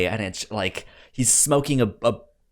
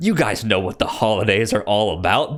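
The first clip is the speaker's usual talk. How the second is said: put-on, more American accent. Retelling what the shopkeeper says at the film's end: more American accent. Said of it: "in a more American accent".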